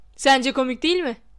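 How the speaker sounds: ordinary delivery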